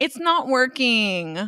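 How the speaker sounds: grating put-on voice. Retelling saying the QR code ordering is not working, in a super annoying put-on voice. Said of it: "in my super annoying Erica voice".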